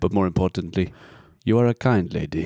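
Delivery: put-on Ugandan accent. Reading out a love letter after being asked: put-on Idi Amin accent. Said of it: "can you do it in the accent?".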